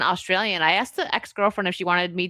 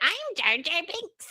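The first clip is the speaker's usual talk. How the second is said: put-on very high, slow little-kid voice; 10 semitones higher, 4 dB quieter than usual. Retelling how a young kid kept showing an action figure: imitating a young kid. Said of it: "And he'd be like".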